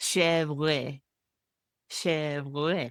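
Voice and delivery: mock French accent, imitated French pronunciation. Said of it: "YouTube channel of a, of a French guy saying".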